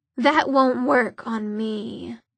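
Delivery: bored, indifferent, unbothered demon voice. Reading a story: a demon cuts off a warlock's banishing spell, bored. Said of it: "said the demon in a bored voice".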